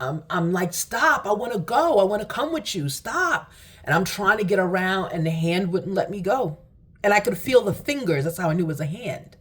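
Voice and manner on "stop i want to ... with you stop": high, tearful, desperate, crying pleading voice. Retelling a plea to a hand pushing them down: retelling crying pleas. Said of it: "I'm crying".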